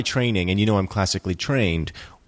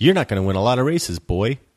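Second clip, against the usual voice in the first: put-on mid-Tennessee Southern American accent. Repeating a line, this time in a southern american accent. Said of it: "I'm doing my Southern accent now".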